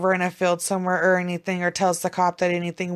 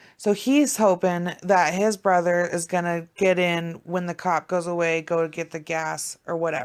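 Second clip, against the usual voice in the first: usual speaking voice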